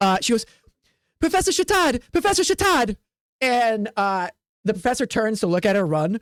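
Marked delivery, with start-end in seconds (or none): 1.2-3.0 put-on high-pitched young elf girl voice. Voicing a young elf student who runs up calling the professor: young female elf student voice. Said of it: "a young student comes up, a female elf".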